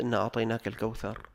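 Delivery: normal talking voice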